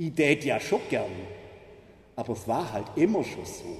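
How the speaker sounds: Swabian German accent. Quoting the reform refusers' favorite phrase, in a Swabian German accent. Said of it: "Ich sage es jetzt mal schwäbisch".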